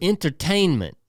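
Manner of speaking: entertainment stressed and clearly enunciated. Retelling a movie line, quoting Denzel: enunciating ENTERTAINMENT. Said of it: "really enunciates enter-, entertainment".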